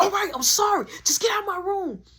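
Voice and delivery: mock very high, shrill, lashing-out angry yell. Retelling a brother telling the speaker to get out of his room: imitating an angry outburst. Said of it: "he crashing out, telling me to get out his room".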